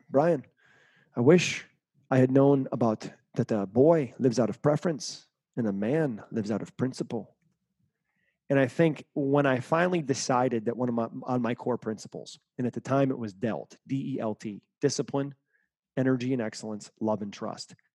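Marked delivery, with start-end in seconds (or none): 0.1-7.3 put-on Brazilian accent. Retell what he answered when asked what he wishes he knew then, in Vitor's Brazilian accent. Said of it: "in his Brazilian accent".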